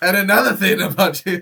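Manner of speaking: mock, very loud, high-pitched, furious ranting shout. Describing cooking while furious, mock-angry shouting at the steak. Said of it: "shouting at the steak".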